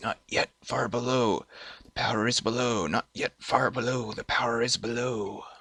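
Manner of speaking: soft, hushed half-whisper all the way through. Narrating to a player, the speaker voices a disembodied voice: half-whispering voice. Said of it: "You hear the whispering voice again".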